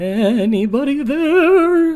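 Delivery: awful horse voice, very high and very loud. A horse speaks into the wizard character's head, in a god-awful horse voice. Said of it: "to this god awful horse voice".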